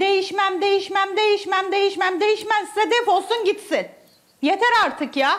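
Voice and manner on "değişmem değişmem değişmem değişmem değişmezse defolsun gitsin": usual speaking voice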